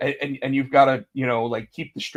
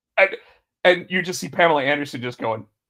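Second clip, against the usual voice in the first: ordinary talk, nothing marked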